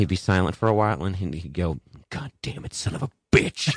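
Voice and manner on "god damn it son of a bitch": play-acted, frustrated, upset burst of swearing. Retelling a coworker's sudden outburst while writing: imitating someone cursing upset. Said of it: "seemed upset".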